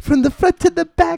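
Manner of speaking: little voice, high, loud, squeaky.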